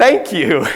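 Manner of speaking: high-pitched, loud, proud voice.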